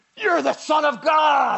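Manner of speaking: very loud, rough, rasping demonic shout. Reading a Bible passage, the speaker voices the impure spirits crying out: demonic voice. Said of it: "in a really demonic-y voice".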